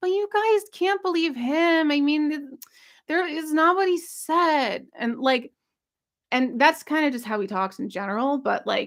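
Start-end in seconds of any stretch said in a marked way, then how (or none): 0.0-4.9 high, whiny, mock-deflated, defeated tone. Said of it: "He sounded very like".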